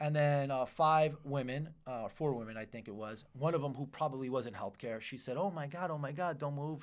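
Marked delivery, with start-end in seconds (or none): 5.4-6.8 sweet, higher-pitched put-on voice. Speaker retells what one of four women said to him, in a Rosie Perez voice. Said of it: "Kind of had the like Rosie Perez voice".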